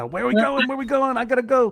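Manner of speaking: high, hyper, excitable, restless snake voice. Acting out a python sticking its head out a car window, hyper python voice. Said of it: "because they're so hyper".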